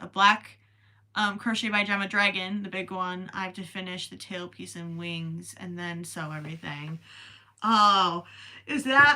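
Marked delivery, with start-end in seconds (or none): 7.6-9.2 words stretched by a very loud yawn. Reacting to a read-out message, yawning. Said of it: "Sorry, I'm yawning".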